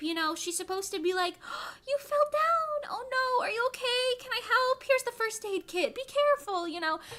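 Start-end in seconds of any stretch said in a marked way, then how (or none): 1.4-6.7 put-on anxious, caring older lady voice, pitched up. Explaining how the adoptive mom in the dub should sound, put-on concerned grandma. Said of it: "concerned grandma type".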